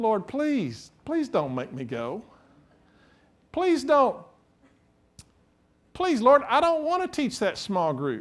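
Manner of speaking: high, pleading whine.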